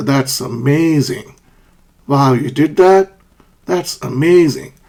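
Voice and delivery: slow, surprised, impressed and amazed exclamation. Teacher demonstrating for students what to say when surprised, surprised tone. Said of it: "When you're surprised".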